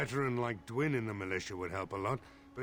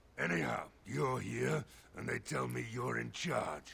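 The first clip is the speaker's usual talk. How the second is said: hoarse, rasping voice. A game character telling the player they've been put in charge, in a raspy voice. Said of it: "suddenly the raspy voice comes back".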